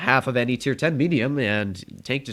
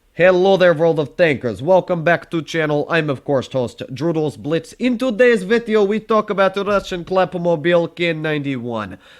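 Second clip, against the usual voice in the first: fake Russian accent throughout; 4 semitones higher, 4 dB louder than usual. A tank video host introducing today's vehicle, in a put-on russian accent. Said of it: "I'm gonna stop with the Russian accent now".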